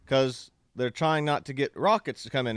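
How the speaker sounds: ordinary delivery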